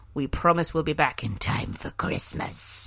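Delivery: eerie, hushed, breathy, spooky whisper. Podcast host promising listeners the show will return, in a put-on voice. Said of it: "What was that voice for Christmas?".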